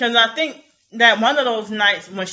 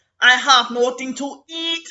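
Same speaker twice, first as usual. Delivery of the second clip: faked Jamaican-sounding accent; 4 semitones higher than usual. Describing a woman's different accents in her videos, imitate her trying to sound Jamaican. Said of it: "she'll sound Jamaican".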